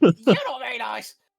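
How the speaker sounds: shrill, very high, very loud sneering goblin voice. Voicing a sneering goblin that peers back through an arrow slit: sneering goblin voice. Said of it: "The beady eyes of a goblin look back at you".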